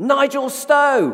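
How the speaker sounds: very high, loud, high-pitched holler. Telling how someone far back in the cafe queue called his name, retelling a loud shout. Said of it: "shouted out in a loud voice".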